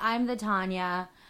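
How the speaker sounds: plain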